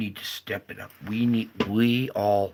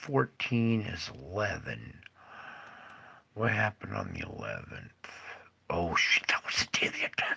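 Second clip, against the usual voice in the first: private, hushed whispered speech to self; 6 dB quieter than usual. Checking back through dates alone, the speaker is whispering to self. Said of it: "I'm whispering to myself".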